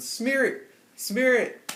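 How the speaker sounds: put-on very high, loud, drawn-out coach shout. Retelling a friend pointing at holds and screaming: imitating someone screaming. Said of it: "He's screaming so loud".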